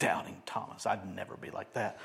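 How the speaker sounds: hushed, whispered, scornful sneer. Imitating people who criticize Doubting Thomas: imitating a sneering voice. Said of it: "with a sneer in our voice".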